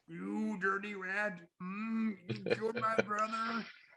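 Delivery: high, slow, deliberate, drawn-out delivery. Answering another speaker with a James Cagney impression. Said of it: "You sound like, uh, Jane Cadney".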